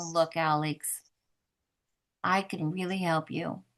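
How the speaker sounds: slow, low, softened, unhurried, reassuring voice. Demonstrating how to say a line to alex, in a slow, lower-pitched voice. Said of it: "Slow your voice down and lower your pitch".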